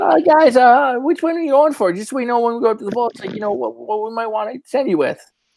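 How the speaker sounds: very high, squeaky voice. Storyteller voicing Sterling addressing the group, in a high squeaky voice. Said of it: "in his high squeaky voice again is like".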